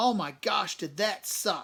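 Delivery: slow, put-on, phony American accent. Retelling what he yelled backstage after the gig, in a phony American accent. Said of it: "in this phony American accent".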